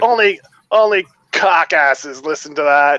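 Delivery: ordinary talk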